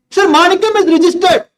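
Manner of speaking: high-pitched yelling shout. Answering the teacher's question aloud in class: shouting. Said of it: "Don't shout".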